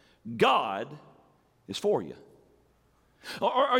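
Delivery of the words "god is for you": strong stress on the word GOD. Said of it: "try it this way".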